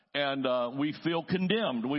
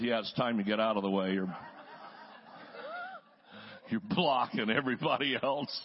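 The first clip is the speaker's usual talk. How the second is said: put-on muttering under breath; 3 semitones lower than usual. Retelling what their mother said about a churchgoer, under her breath. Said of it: "mother would say under her breath".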